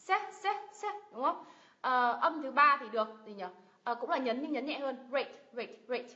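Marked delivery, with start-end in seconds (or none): 0.0-0.9 se of celebrate stressed and pitched high. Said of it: "Nhấn vào tiếp thứ nhất này".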